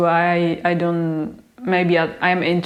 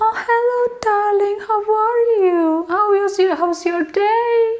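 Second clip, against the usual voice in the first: very high-pitched, friendly, chatty voice. Contrasting greetings here with Czech ones: imitating Christina. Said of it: "did you just do an impression of Christina?".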